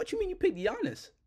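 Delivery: high, wide-ranging, incredulous disbelief.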